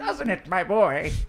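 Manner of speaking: put-on very loud elderly woman voice. A character turns into an old lady and speaks, old lady voice. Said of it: "I turn into an old lady and I go".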